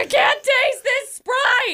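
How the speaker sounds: mock-panicked voice. Retelling the story of not being able to taste a sprite, imitating a panicked voice. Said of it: "I was so panicked".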